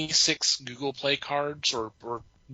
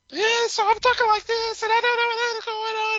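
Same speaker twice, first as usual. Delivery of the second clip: very high, loud, put-on fake female voice; 6 dB louder than usual. Retelling a scam call, imitating the scammer's fake female voice. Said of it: "trying to do a female voice as her".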